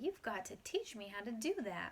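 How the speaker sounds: ordinary delivery, nothing marked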